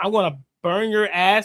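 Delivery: put-on overconfident voice. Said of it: "he said it with so much confidence".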